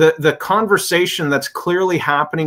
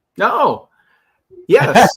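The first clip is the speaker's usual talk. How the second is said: high-pitched, surprised reaction, caught off guard; 5 semitones higher, 4 dB louder than usual. Hearing which artist the other speaker selected, reacting surprised. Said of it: "you you sound very surprised".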